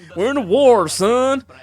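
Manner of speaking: very loud, belted, high Western accent. Playing a game and voicing a line: Western accent. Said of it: "do my lovely Western accent".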